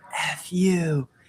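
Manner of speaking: high-pitched, hollered yell. Retelling a stranger at a gas station: imitating someone yelling. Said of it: "he yells".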